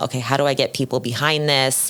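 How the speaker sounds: normal talking voice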